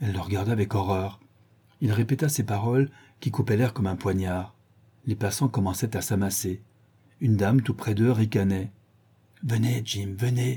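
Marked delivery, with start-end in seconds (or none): 9.4-10.6 breathed whisper, quieter and slower. She urges jim to come away as passers-by gather, breathed whisper.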